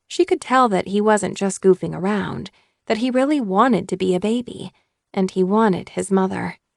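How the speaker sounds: usual speaking voice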